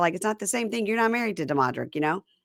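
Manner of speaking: ordinary delivery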